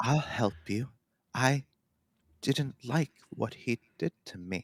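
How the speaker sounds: soft, creepy voice with rage held back. Explaining how a character's voice developed, the speaker demonstrates it in a creepy voice. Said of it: "it slowly became that creepy voice".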